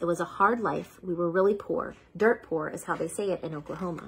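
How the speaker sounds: ordinary delivery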